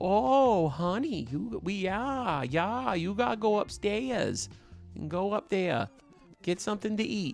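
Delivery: put-on soft, slow Maine accent. Speaker doing her mom's voice: put-on Maine accent. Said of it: "more Mainer with my mom".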